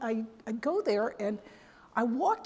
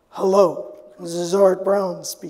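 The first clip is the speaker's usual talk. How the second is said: big, deep, loud baritone voice; 4 semitones lower, 10 dB louder than usual. Retelling how a coworker answered the phone mimicking Art Brown. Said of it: "he used to like to mimic Art Brown".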